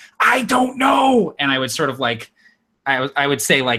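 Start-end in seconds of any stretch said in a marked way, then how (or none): 0.2-1.4 high-pitched, loud stage whisper. Answering another player while climbing shelves in a game: loud whisper. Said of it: "the loud whisper back where I'm, like, trying to be a little bit quiet".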